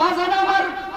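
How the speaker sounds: fervent, high, loud, impassioned delivery.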